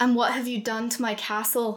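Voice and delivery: growling, snarled. Reading a story aloud, voicing a character who growls the line. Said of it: "He growled".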